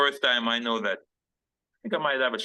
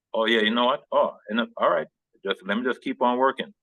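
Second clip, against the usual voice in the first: ordinary talk, nothing marked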